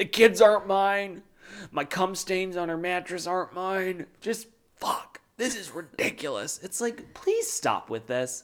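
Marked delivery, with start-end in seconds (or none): 0.0-6.6 acted-out, self-pitying, poor-me martyr lament. Retelling a confessional, imitating Cody playing the martyr. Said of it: "really trying to play the martyr here".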